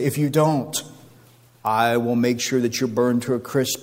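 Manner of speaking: plain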